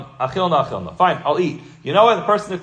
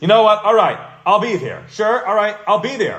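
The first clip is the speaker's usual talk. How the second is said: insincere, sarcastic, grudging tone; 3 semitones higher than usual. Acting out a pressured lunch guest finally agreeing: imitating sarcastic agreement.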